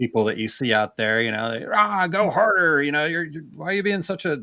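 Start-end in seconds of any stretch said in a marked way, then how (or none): 1.6-4.4 mock high scolding scream in self-help guru style. Imitating self-help people screaming at someone they never met: imitating someone screaming. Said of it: "sitting there screaming at you".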